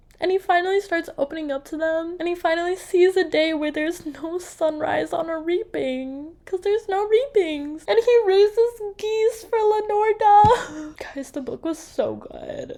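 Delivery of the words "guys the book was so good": near-whispered, soft, tearing up, emotional. Ending a book review video, telling viewers the book was so good: tearing up. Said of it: "I know I'm like tearing up".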